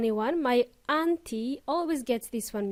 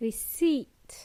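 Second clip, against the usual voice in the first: unvoiced whisper. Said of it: "There is a silent P in there".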